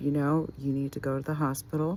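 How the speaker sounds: normal talking voice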